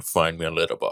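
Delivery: put-on Scottish accent. Giving social media handles: Sean Connery voice. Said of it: "I don't care for Sean Connery".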